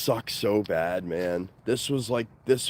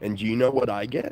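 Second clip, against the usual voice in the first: plain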